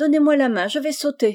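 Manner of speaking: impatient, high-pitched, out-of-patience urging tone. By the water, after his stone bridge keeps failing, she speaks, impatient. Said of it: "prise d'impatience".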